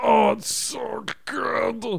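very high, slow, dragged-out, creaky dog voice. Host shows listeners the voice used for the dog, voicing Shangela the dog. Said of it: "That's when she's smelling something good".

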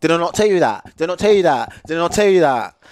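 high, loud accusing shout, repeated over and over. Quoting a girl confronting a guy, retelling a shout. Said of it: "shouting at me".

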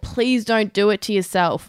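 ordinary talk, nothing marked

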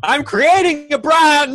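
very loud, very high, shrill, drawn-out screech. Retelling what he screamed back at his mum at four a.m.: imitating his own past scream.

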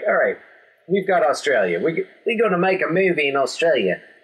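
put-on Australian accent. Imitating movie makers, in an Australian accent. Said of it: "It's my Australian accent".

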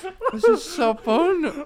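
high, loud, giggling, delighted laughter through words.

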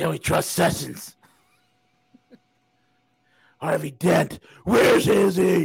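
gravelly, rough, grinding superhero voice. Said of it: "Crypto Cowboy wants me to do the Batman voice".

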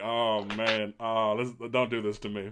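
ordinary talk

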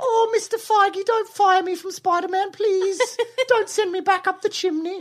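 put-on very high little British boy voice. Speaker performs the duo's running Tom Holland impersonation bit: Tom Holland impression, little British boy. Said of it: "he's like a little British boy".

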